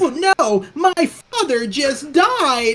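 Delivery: very high, gushing, wildly upbeat and enthusiastic. You mock how a game's voice performer plays even a very sad scene, imitating a super enthusiastic voice. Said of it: "She's playing the voice off as super enthusiastic".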